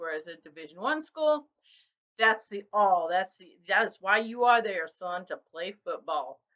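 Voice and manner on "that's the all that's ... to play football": put-on Texas accent. Comparing college football programs and voicing a division one school, texas accent. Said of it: "I don't know why I just went all Texas on that".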